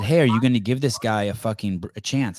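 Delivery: ordinary delivery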